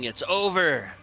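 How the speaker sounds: yelling, shouting. Voicing a character who shoves another to the ground: yelling. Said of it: "I'm yelling".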